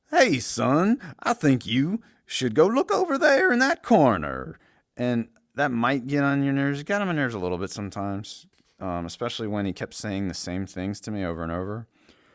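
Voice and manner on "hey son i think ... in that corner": very high, loud, animated, swooping movie-star voice. Imitating a game's talking wristwatch giving a hint: Matthew McConaughey voice. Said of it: "it sounds like Matthew McConaughey's voice".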